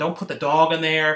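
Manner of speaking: play-acted, really irritated, heated, pissed-off, angry voice. Recounting a scene, speaker quotes one guy getting pissed at another, acting out a pissed-off guy. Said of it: "he's like screaming at him like".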